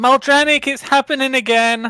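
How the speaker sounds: very high, loud, alarmed in-character yell. Standing up in the hall in character and calling out: yelling in character. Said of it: "I'm just gonna yell".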